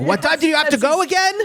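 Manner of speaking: play-acted, very high, shrill, carrying yell. Retelling how a dad asks a question from the top floor: imitating dad screaming upstairs. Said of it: "instead screaming from the, the top floor".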